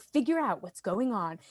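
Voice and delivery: mock fancy movie-trailer voiceover voice. Describing a political ad, the speaker quotes its words in a movie trailer voice. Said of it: "like a movie trailer voice".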